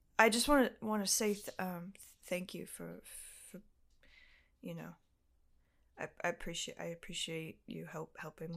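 put-on sheepishness. Retelling how the tall guy thanked the speaker for helping: imitating an ashamed, sheepish thank-you. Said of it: "so ashamed, so sheepish".

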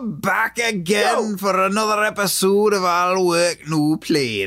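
put-on Scottish accent. Opening a podcast episode, the hosts do the intro in a put-on Scottish accent. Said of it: "We're doing it in Scottish".

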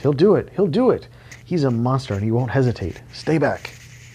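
urgent, high-pitched cry. A woman warns the soldiers to stay back from an armed man, crying out a warning. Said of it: "Heather cried, waving off the gathering soldiers".

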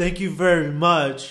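loud, slow, heavy sarcasm, each word dragged. Retelling a woman who had to wait in front of the truck: mock-sarcastic thank-you. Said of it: "She said very sarcastically".

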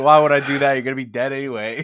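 very loud, rushed, biting sarcasm. Acting out how God might answer a sick smoker: imitating God being sarcastic. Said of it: "he's just as sarcastic as us".

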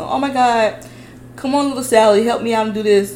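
gentle, polite mom voice.

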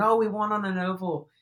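thrilled, high, excited victory scream. Recalling a driver hopping out of the car after winning, retelling AJ Allmendinger's excited scream. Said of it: "he's screaming".

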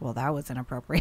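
put-on muttering under breath. Retelling a niece's remark about a classmate's fact: imitating muttering under breath. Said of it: "under her breath".

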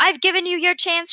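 piercing, shrill, very high-pitched cry. Narrator reads the man in the yellow suit speaking to the Tucks, shrill. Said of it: "shrilled the man in the yellow suit".

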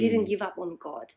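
plain

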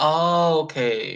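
sincere, genuine, understanding tone. Clarifying an earlier remark was not sarcastic: understanding, not sarcastic. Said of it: "I'm not saying in a sarcastic way, I'm saying like, oh, okay. Like understanding".

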